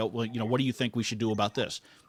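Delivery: normal talking voice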